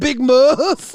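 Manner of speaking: loud, icky tone dripping with ick. Repeating how another speaker said a nickname: imitating Phantom's icky "Big Muff". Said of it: "There's a level of ick in his voice when he says that".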